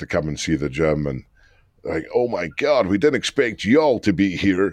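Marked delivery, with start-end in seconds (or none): 2.1-4.7 horrible, put-on American accent. Quoting an American couple who visited the gym: bad American accent. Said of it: "Excuse the horrible American accent".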